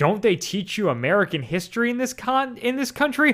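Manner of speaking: patronizing tone. Retelling Dale's reply after Sue asked about the Alamo, mock-condescending, imitating Dale. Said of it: "Dale very condescendingly is like".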